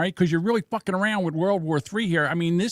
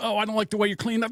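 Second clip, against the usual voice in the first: hasty, rattled-off, outraged ranting; 4 semitones higher than usual. Speaker retells the Democrats complaining about the cleanup, imitating someone screaming. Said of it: "they start screaming that".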